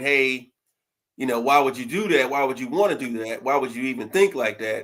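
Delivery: play-acted crying, hurt, wounded, tearful voice. Retelling her reaction to being asked to sign a prenup: imitating someone hurt and crying. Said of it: "she was kinda hurt and crying".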